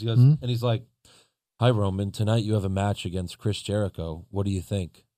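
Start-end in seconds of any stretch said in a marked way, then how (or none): 1.6-5.0 flat, level, low, quiet monotone drone. Mocking how Tom Phillips interviews Roman Reigns; monotone Tom Phillips impression.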